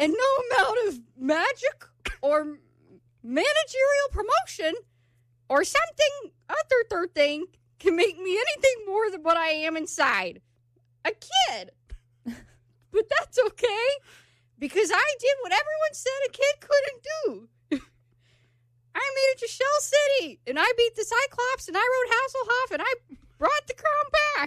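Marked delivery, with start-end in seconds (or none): 12.9-24.5 high-pitched cartoon character voice. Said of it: "you sound like SpongeBob's grandma".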